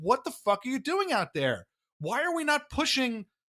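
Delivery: mock high yell, climbing in pitch as it goes. Recounting watching a hockey game, retelling his own yelling at the team. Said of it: "I'm yelling".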